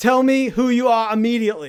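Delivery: loud put-on Austrian accent. Demanding someone say who they are, in Schwarzenegger impression. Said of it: "That was my Schwarzenegger impression".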